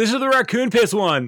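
cheerful, high, proud character voice.

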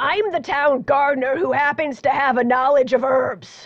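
rasping, aged voice, pitched high. A narrator voices the town gardener answering a visitor, in a raspy older voice. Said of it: "you hear a raspy older voice".

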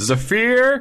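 high, loud call projected across distance.

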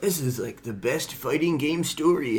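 patronizing, know-it-all, condescending talking-down tone. Quoting what other people say, in a mock-condescending voice. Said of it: "I just did a condescending voice".

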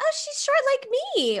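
very high, laughing, gushing, amused delivery.

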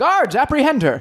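very high, sharply barked, yelled delivery. Voicing Captain Hollis ordering the guards to seize her: Captain Hollis yelling.

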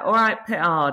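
put-on London accent. Showing how family from london say the surname: south london accent. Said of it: "sort of South London, so it's more like".

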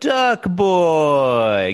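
put-on "duck boy" with "boy" drawn out. During retakes, one person imitates how the actor dragged out 'duck boy'. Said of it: "you dragged out the duck boy".

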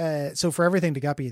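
plain

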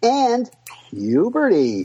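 whimsical, swooping around, high. Describing boys growing up, the speaker says the words: said like Willy Wonka. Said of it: "You said it like Willy Wonka".

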